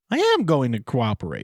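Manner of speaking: voice cracking and breaking as it goes. Retelling a son answering his dad, imitating Brian Coey's cracked shrill voice. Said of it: "in like a cracked kind of shrill voice".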